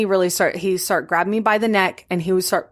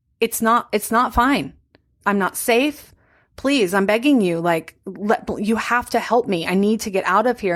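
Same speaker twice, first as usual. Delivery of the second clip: imitated pleading tone. Retelling pleading with Alani for help to escape: retelling a plea. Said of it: "I just begin pleading with her".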